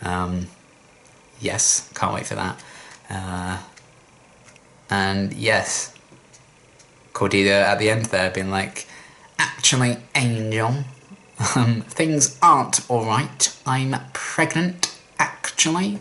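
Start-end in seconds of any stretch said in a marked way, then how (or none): 9.4-16.0 higher-pitched smug, gloating, know-it-all villain voice. Recapping a TV episode, do an evil Cordelia impression. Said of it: "that's my evil Cordelia impression".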